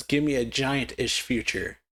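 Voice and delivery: ordinary talk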